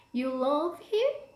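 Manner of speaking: sharp, surprised rise on him. Intonation example of disbelief or surprise, sharp rise on him. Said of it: "extra rising intonation... disbelief or surprises".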